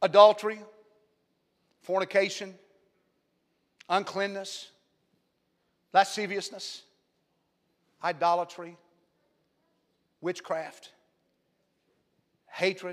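very slow, deliberate, word-by-word reading. Reading a list aloud so it sinks in, reading slowly. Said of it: "I'm reading them slow".

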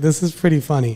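ordinary talk

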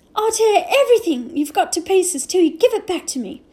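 jerky, loud, high shouting in bursts. Omri, pinned and pummeled by Adil in a fight, shouted in jerks. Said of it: "Omri shouted in jerks".

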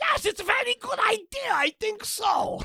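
poorly done put-on voice, pitched very high. Continuing the Hitler bit: Hitler impression. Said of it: "His Hitler impression is so offensive".

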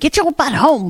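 ordinary talk

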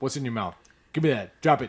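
acted, mock scolding tone. Acting out what you'd say to a dog with something in its mouth, mock-scolding a dog. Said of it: "You're like".

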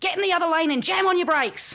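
shrill, very high-pitched, loud scream. Recounting the dead grandfather screaming in the speaker's ear as the tree fell, retelling a scream. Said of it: "screamed in my ear".

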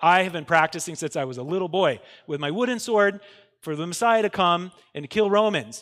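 plain

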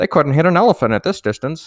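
put-on high old-timey voice. Say the last words of a man shot by a sharpshooter in Conan O'Brien's old-timey voice. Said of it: "saying it in like Conan O'Brien old-timey voice".

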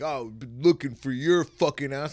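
furious, angry chewing-out yell. Retelling how an officer spoke to him after an escape: imitating an angry officer. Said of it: "this guy was mad".

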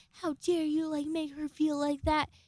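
acted, high-pitched, furious, outraged flipping-out outburst. Retelling how a roommate flipped out at them, acting out her flipping out. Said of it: "just starts flipping out on me".

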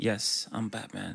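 smooth, suave playboy-billionaire voice. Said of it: "Smooth playboy, billionaire".

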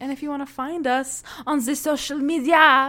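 high, bad fake French accent.

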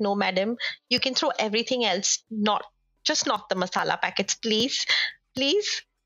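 ordinary talk, nothing marked

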